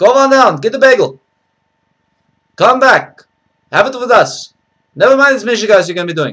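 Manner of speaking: Yiddish-inflected accent.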